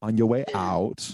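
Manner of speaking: slow, deliberate, drawn-out delivery. Quoting a movie line in an Arnold Schwarzenegger impression. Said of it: "are you doing an Arnold impression".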